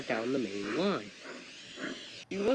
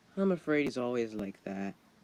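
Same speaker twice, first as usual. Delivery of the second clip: usual speaking voice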